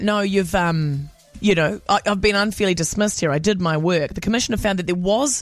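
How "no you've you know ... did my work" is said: usual speaking voice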